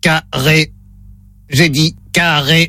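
monotone machine voice, low and flat. Playing the robot in a phone-line test, in a robot voice. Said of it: "Voix de robot enclenchée".

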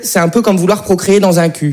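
plain

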